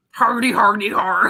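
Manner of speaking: laughing in a video game monster voice. Friends choosing characters; one tries out a Bowser voice. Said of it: "I'd be a good Bowser".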